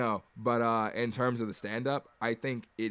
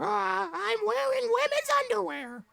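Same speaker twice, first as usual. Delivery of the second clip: squeezed-up, loud, creaky puppet voice; 6 dB louder than usual. Sharing a favorite movie line with the group, Pinocchio impression. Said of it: "So there's my Pinocchio impression".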